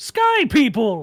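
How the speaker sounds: booming, loud giant voice calling out. Narrating a scene, voicing Tarla emerging from around the tent: booming Tarla voice. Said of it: "you hear a booming voice say".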